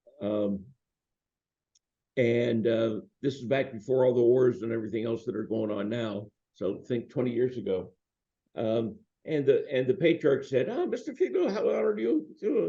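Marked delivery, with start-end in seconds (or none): 10.7-12.7 put-on very high-pitched French accent, very high register. Retelling a phone call, play the patriarch greeting you in a very high-pitched French accent. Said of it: "He had a very high pitched French accented voice".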